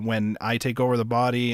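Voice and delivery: ordinary talk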